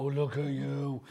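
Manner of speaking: voice used for talking to dogs. Showing how you greet a dog you love in the street, automatic dog voice. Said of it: "my automatic like dog voice".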